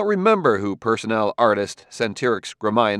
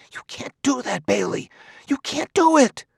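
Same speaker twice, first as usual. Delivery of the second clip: very high, loud, carrying stage whisper; 13 semitones higher than usual. Reading the story, voice one character protesting to another in a loud whisper. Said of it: "said in a loud whisper".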